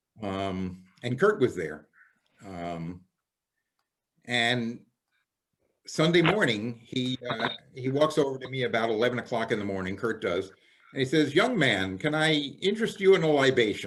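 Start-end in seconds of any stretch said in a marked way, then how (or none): 11.4-13.9 put-on funny-sounding, old-fashioned old-world way of talking. Retelling being offered a drink at a convention: imitating Kurt's old-world way of talking. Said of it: "He talked funny. He was very old world".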